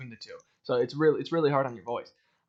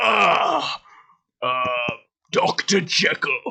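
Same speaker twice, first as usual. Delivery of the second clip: low deep gravelly voice, louder; 5 dB louder than usual. Showing a line from the musical role: low gravel Hyde voice. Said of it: "that kind of thing".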